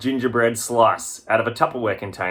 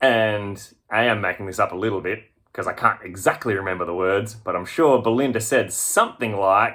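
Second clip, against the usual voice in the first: usual speaking voice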